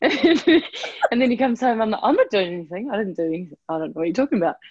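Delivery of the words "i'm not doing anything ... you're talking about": ordinary delivery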